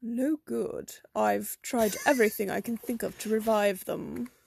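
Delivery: put-on posh, educated English accent. Voicing a prim intellectual character in a game: highbrow English accent. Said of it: "you can go with an English accent for this guy".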